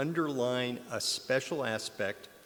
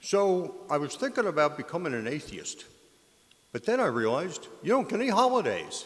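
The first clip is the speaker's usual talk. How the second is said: attempted Philadelphia accent, pitched up; 5 semitones higher, 4 dB louder than usual. Retelling a flooring ad man's corny joke, in best philly accent. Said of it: "I'll do this in my best Philly accent".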